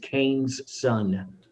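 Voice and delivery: soft, quiet mutter under the breath. Retelling a line a character said under his breath: imitating a mutter under the breath. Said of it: "Under his breath".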